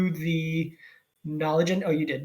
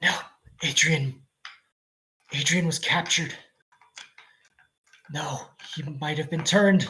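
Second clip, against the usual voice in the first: suspicious, paranoid, injured sorcerer voice. Game master voicing a bound, injured sorcerer growing paranoid: paranoid injured sorcerer. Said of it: "being a sorcerer, / What he had, / being a sorcerer, / you came injured".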